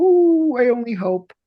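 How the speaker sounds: very high, very slow, drawn-out Italian mom voice. Actor retelling mother's reply to news of booking a tv series, imitating italian mom. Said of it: "she goes".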